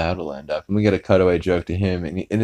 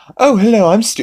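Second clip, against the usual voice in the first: mock gushing fan voice, higher and louder; 6 dB louder than usual. Retelling a cartoon scene, a character greeting Death: imitating a gushing fan. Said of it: "he just starts completely fanning out".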